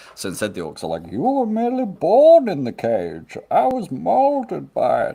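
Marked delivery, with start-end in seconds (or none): 1.1-5.2 very high, very slow character voice, stretched and swooping. Voicing orcs for the listeners as more Bane, in a Bane voice. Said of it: "I'll do some more Bane for you guys".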